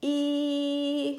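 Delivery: long, very high, drawn-out e vowel. Explaining vocal cords, showing a tightly pulled cord: high-pitched E vowel. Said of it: "the tighter I pull that vocal cord, the higher the pitch gets. So when I pull it tight".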